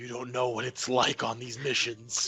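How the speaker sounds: very loud stage whisper. Voicing a character gripping another's shirt and leaning in: very loud whisper. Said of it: "a very loud whisper".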